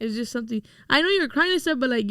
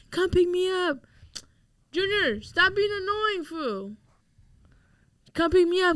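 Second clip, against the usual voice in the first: play-acted, high-pitched crying and yelling at once; 6 semitones higher than usual. Retelling a phone call where the speaker's mom demands a pickup: imitating mom crying and yelling. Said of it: "my mom crying, yelling".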